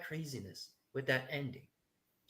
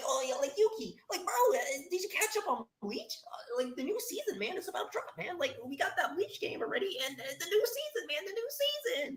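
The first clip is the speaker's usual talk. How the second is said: much higher, hyped fanboy screaming and gushing. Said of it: "being hyped and screaming out".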